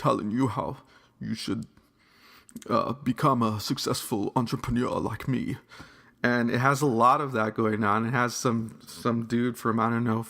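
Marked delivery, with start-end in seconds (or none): 2.9-5.6 put-on posh upper-class British accent. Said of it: "speaking with a posh British accent".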